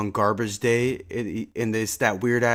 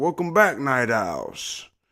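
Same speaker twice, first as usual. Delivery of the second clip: put-on demon voice of an older man; 2 semitones higher than usual. Describing a demon character from a show, doing a Chris Pine demon voice. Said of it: "that old ass fifty dude's voice".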